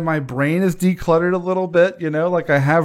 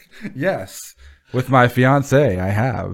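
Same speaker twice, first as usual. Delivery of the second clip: mock mechanical robotic voice, lower pitch; 5 semitones lower than usual. Repeating another speaker's answer back to them: imitating a robotic answer. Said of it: "That was so robotic".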